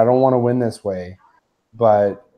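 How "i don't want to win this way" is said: ordinary talk, nothing marked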